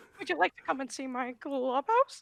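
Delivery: put-on squeaky cartoon mouse voice. Doing a requested cartoon impression: Mickey Mouse voice. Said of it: "I can do Mickey Mouse".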